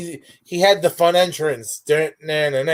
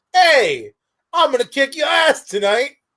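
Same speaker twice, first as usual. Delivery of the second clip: put-on pitched-up Australian accent; 8 semitones higher than usual. Describing how he'd taunt an opponent before a match, Adam Rose Australian accent. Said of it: "you sounded Australian there".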